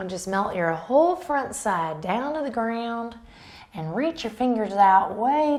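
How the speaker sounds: hammed-up fake country twang accent. Instructor guiding students into a stretch: put-on country twang. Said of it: "(country twang)".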